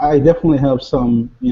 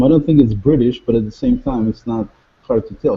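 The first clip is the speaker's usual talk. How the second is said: usual speaking voice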